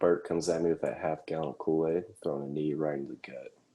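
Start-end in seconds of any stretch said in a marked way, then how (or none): none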